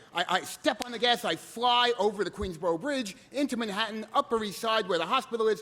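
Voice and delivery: ordinary talk, nothing marked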